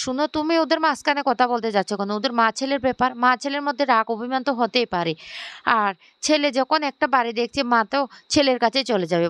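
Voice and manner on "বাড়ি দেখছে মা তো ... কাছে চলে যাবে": ordinary delivery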